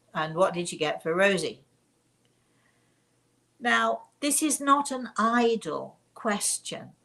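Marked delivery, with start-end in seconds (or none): 0.1-1.6 put-on sergeant-major voice. Retelling how the father asks the mother something, in a sergeant-major voice. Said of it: "he has a very sort of sergeant major voice".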